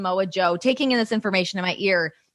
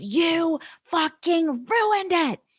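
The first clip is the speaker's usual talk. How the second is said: put-on furious, high-pitched screaming, words drawn out; 9 semitones higher than usual. Retelling someone in his ear screaming at him over a segment, retelling a furious scream. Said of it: "Screaming at me".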